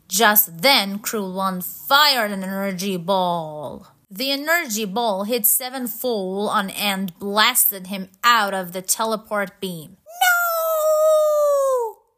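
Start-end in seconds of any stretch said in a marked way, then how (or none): 10.2-11.9 very high, stretched-out, drawn-out shrieking scream. As a friend is blasted out of the teleport beam, a companion cries out, screaming. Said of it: "Screamed Nock".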